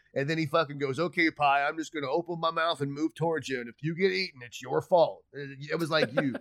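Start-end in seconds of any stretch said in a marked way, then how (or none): 0.9-5.2 put-on dopey cartoon dad voice. Retelling a scene from The Simpsons: Homer Simpson voice. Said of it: "And he's like".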